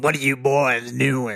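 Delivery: trollish put-on storybook troll voice. Speaker guesses how an actor would talk, trying a trollish voice. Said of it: "I would expect him to be rather trollish".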